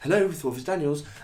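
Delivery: abrupt fake telephone voice. Describing a woman who swears, then answers the phone, imitating her phone voice. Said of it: "she's also got a phone voice".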